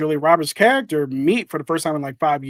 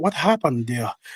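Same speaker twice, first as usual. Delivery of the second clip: put-on English accent, man's voice; 4 dB quieter than usual. Retelling a story where a husband arrives at the hospital, imitating an english accent. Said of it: "that's my impression of his English accent".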